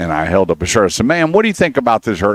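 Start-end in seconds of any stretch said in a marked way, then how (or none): 1.1-2.3 put-on brash, overly loud, pitched up. Retelling asking a shopper at Dick's Sporting Goods about a shirt: imitating talking loudly. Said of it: "And I am so loud".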